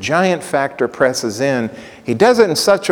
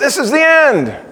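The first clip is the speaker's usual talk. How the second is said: mock yelled cry, pitched very high; 12 semitones higher, 4 dB louder than usual. Telling a story, acting out a man who yells: retelling a yell. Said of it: "He yells".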